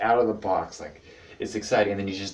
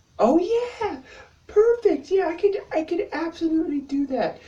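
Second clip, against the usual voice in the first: put-on sweet agreeable girl voice, much higher, louder; 4 dB louder than usual. Describing a friend dodging suggestions, imitating her mock nice-girl tone. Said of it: "she gave the nice girl like".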